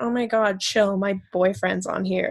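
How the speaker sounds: normal talking voice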